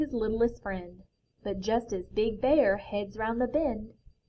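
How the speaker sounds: ordinary delivery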